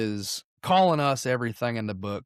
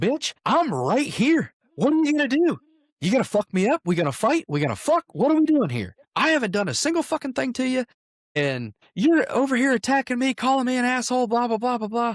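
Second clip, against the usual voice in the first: mock, very high, furious, enraged confrontational rant; 13 semitones higher, 4 dB louder than usual. Retelling a confrontation in a bar: imitating an enraged man. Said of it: "he finally gets to his boiling point".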